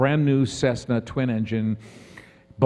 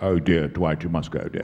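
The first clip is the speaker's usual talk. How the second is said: low, genteel put-on voice. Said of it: "and Patrick said".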